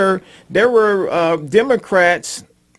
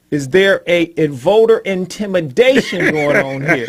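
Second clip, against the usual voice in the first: plain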